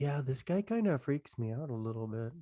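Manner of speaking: whispering under breath. Voicing Sven muttering to the people next to him: whispering under his breath. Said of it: "kinda says it under his breath".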